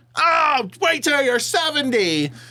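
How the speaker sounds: very high, drawn-out, jeering scream. Retelling audience members shouting at a comedian: imitating a heckler screaming. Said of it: "decide they wanna just scream shit out".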